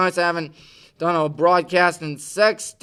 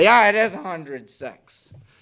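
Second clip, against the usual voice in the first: voice breaking, cracking. Counting the days until high school football season begins, voice cracking. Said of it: "sorry for the voice crack".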